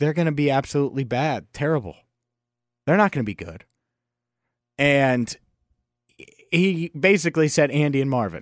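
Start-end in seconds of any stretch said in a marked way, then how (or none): none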